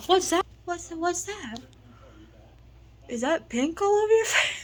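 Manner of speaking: high, shocked squeal. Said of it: "She'll go, she'll just go".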